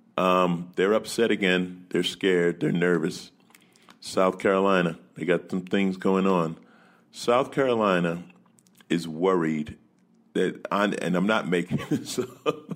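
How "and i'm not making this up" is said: talking with laughter breaking in. Telling another story about South Carolina, laughing while talking. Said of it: "I'm sorry for laughing".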